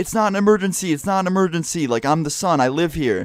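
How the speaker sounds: insistent, repeated, mild yell of protest. Recounting yelling into a phone where nobody could hear: retelling a yell into a phone. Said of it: "yelling into a phone".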